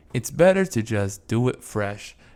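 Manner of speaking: plain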